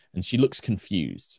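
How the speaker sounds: plain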